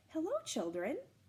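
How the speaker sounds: sweet, kindly, lifted tone. Reading a story aloud, the narrator voices Miss Nelson greeting the children: sweet voice. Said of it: "someone said in a sweet voice".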